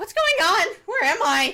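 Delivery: shrill, very high, loud voice. Game master voicing a character the players hear: high-pitched voice. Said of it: "that lovely high-pitched voice that you love hearing".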